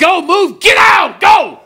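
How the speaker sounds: loud urgent shouting. Demonstrating what you'd yell at people if the building were on fire: yelling urgently. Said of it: "when you were yelling at me".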